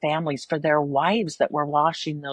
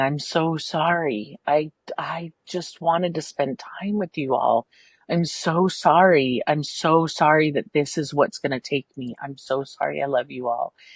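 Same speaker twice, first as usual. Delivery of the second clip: slow, tearful, broken-up, sobbing delivery. Retelling her mother's words on her last night: retelling her mother sobbing. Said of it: "literally sobbing".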